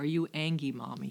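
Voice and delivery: put-on little child's voice. Retelling a two-year-old daughter's question from the car seat: imitating a little child's voice. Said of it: "her little voice said to me".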